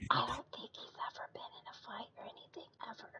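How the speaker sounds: barely audible, very quiet hushed whisper. In a group game scene, a player whispers a remark, whispering. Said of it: "I honestly could not hear you".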